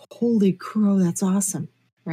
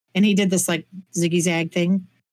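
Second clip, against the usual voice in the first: usual speaking voice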